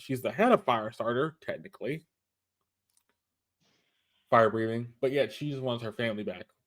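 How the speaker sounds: usual speaking voice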